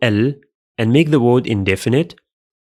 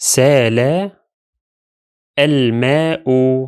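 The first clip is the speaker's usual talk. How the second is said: سال, then a pause before الماء. Arabic reading lesson on a clearly pronounced hamza: pause after سال. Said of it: "only if we pause after the first word".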